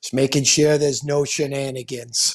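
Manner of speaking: put-on broad New York accent, laid on thick. Retelling a man's answer at a hockey game: Al's thick New York accent. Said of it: "he's got that thick New York accent".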